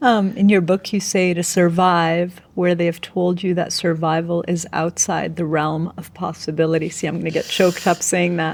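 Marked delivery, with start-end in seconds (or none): none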